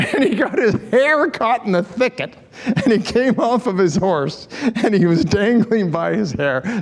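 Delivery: words broken up by laughter. The speaker tells a story they find funny, laughing while speaking. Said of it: "Sorry, I'm laughing".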